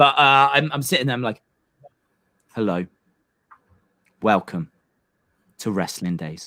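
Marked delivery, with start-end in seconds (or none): 2.5-6.5 mock-serious delivery, lower and quieter. Imitating the opening line of own very first video: imitating own very serious delivery. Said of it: "And I am so serious".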